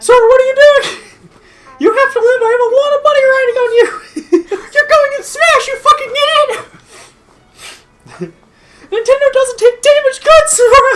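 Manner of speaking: put-on cartoon mouse voice. Dubbing a cutscene as Mickey, urging Sora to live: voicing Mickey. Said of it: "Mickey's just like".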